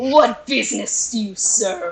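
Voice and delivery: slow, menacing, threatening hobgoblin monster-king voice. Voicing a hobgoblin on a throne questioning a player: menacing hobgoblin voice. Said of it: "I'm getting pointed at menacingly".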